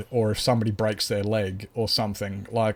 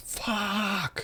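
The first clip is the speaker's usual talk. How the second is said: play-acted agonized scream, very high, at full lung power; 11 semitones higher, 7 dB quieter than usual. Retelling a painful injury, imitating own scream at full volume. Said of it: "I just screamed at the top of my lungs".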